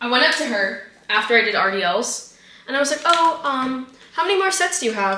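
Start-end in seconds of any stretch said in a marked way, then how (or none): 3.0-5.2 mock gentle, friendly, sweet, polite tone. Retelling asking a girl at the gym how many sets she has left: imitating own sweet asking tone. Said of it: "I said it in a really sweet way".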